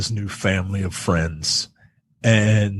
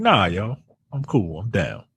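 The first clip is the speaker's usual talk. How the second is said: put-on West Indian accent; 3 dB quieter than usual. Retelling how a new kid answered questions about his accent: imitating Alex's West Indian accent. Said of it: "Alex has his um his his West Indian accent".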